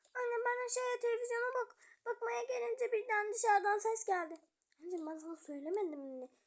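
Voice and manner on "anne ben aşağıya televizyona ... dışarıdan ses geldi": high, weepy, tearful crying voice. In a drama, a child answers her mother, crying. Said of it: "ağlama anneciğim".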